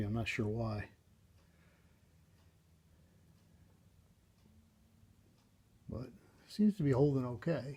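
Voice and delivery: a touch hoarse, rasp creeping in. Speaker holding a taped piece in place while it sets, in a slightly raspy voice. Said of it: "Voice is getting a little raspy".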